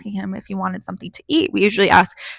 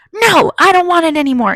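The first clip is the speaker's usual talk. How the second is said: put-on furious, high, loud shouting; 9 semitones higher, 6 dB louder than usual. Retelling how a man screamed at them when offered his omelet; imitating a man yelling. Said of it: "yelling at me".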